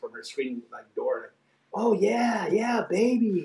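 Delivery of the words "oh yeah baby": mock yell, much higher, slower. Retelling a girl yelling from a screen door, retelling a yell. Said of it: "I could hear her yelling".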